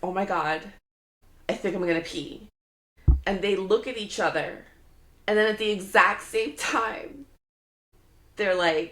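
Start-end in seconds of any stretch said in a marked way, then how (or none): none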